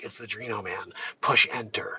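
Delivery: very quiet, hushed, barely audible voice under the breath. Doing a mock impression of Mark Zuckerberg for the show: Mark Zuckerberg impression. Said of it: "He's like".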